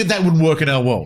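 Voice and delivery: plain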